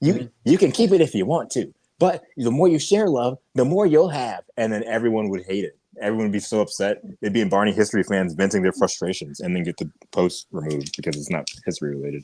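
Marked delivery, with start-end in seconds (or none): 0.0-4.4 pitched-up, high cartoon game hero voice. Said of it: "I just make him sound like Sonic".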